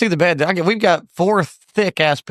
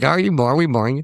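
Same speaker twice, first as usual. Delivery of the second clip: usual speaking voice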